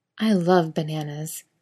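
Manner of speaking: usual speaking voice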